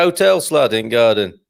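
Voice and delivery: put-on Yorkshire dialect voice. Chatting with another speaker, joking in a mock yorkshire accent. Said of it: "as you might say up in Yorkshire".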